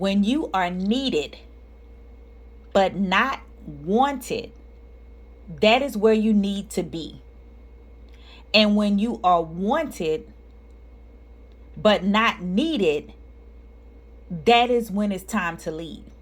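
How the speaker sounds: slow, deliberate, measured word-by-word delivery. Speaker reads a quote slowly to the audience: slow, deliberate delivery. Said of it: "and I'm gonna say it slow".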